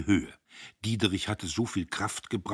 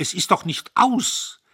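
shrill, very loud, high, desperate cry of despair; 11 semitones higher, 8 dB louder than usual. Narrator reads a man's reply to a woman's doubts: desperate outburst. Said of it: "Er fuhr auf, verzweifelt".

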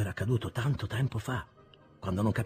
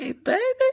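very high, shrill, raised, wistful, sadly teasing; 8 dB louder than usual. Narrator voicing a young lady repeating her question to the narrator; sadly joking tone. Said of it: "ripetendo in tono tristemente scherzoso".

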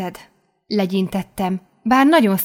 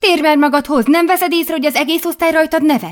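sharp, high-pitched snapping tone; 8 semitones higher, 4 dB louder than usual. Shaking the narrator's shoulder while the class laughs, someone snaps at them. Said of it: "Ripakodott rám".

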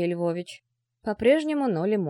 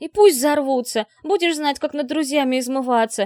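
fiery, hot-tempered, heated, raised voice; 5 semitones higher, 6 dB louder than usual. Tatiana retorts to Anna, who told her not to shout, heated. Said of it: "Запальчиво начала Татьяна".

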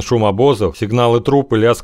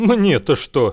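scornful, contemptuous, pitched-up scoffing snort; 7 semitones higher than usual. An unseen messenger answers the guard blocking him, contemptuous snort. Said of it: "презрительно фыркнул невидимый вестовой".

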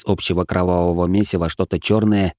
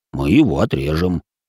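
plain reading voice

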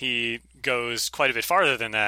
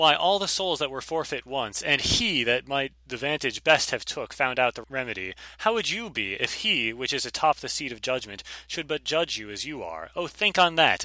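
ordinary talk, nothing marked

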